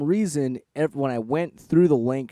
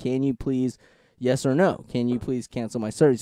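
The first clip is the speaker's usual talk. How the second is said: imitated really polite tone. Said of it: "really polite".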